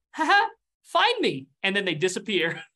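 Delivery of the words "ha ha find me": put-on very high, slow, eerie little ghost-child voice. Voicing a young dwarven ghost heard by the players: spooky young ghost voice. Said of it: "I will say it's spooky".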